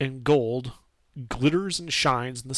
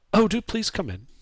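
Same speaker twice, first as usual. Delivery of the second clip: gentle, high, welcoming calling tone; 7 semitones higher than usual. Game master voices someone behind a door inviting the player in: soft voice. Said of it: "You hear a soft voice call from within".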